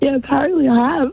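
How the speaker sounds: husky, worn-out rasp. A caller on the phone tells the host she has lost her voice, hoarse. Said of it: "Have you lost your voice?".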